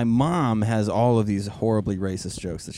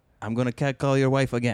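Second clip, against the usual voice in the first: put-on respectful, polite voice; 3 semitones higher than usual.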